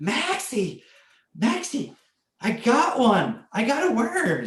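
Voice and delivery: raspy, very high, very slow excitement. Retelling Seneca calling to Maxie after getting a worm, imitating Seneca's rasping excited voice. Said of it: "her voice was like rasping".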